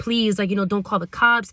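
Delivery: put-on pleading voice. Speaker retells a man's words after an accidental shooting, imitating someone pleading. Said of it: "he was like pleading".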